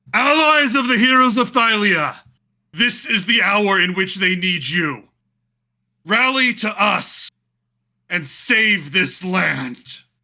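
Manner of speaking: very high, loud, booming, roaring rallying voice. Narrating the campaign, voicing Valis calling the heroes' allies: Valis's roaring rallying cry. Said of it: "roars and says".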